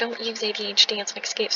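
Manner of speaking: ordinary talk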